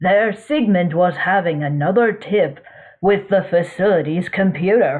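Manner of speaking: ordinary delivery, nothing marked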